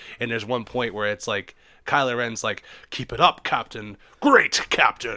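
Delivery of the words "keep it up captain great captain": mock angry-sounding villain voice. Recalling a game level, quoting a villain's line: mock-angry Kylo Ren line. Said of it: "just sounding so angry".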